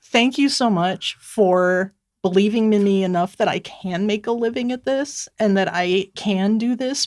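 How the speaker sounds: choked up, on the verge of tears. An author thanking readers, choked up and about to cry. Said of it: "I'm going to cry. Sorry".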